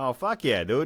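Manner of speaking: excited Boston accent. Showing how the accent comes out when excited: Boston accent. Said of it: "the fucking accent will come out".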